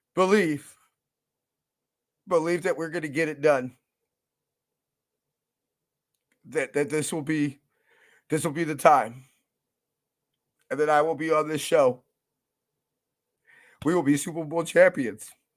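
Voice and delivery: fighting back tears. Addressing his audience about a dream of his, holding back tears. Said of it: "I- I'm trying not to cry right now".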